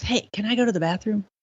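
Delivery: whisper. Retelling a plane passenger asking the flight attendant during pushback, retelling a whisper. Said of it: "He whispers up to the flight attendant".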